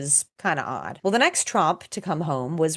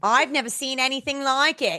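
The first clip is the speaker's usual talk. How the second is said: higher-pitched put-on Australian accent; 9 semitones higher than usual. Quoting a stumped man about a bizarre road trip: Australian accent. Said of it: "That's my Australian accent".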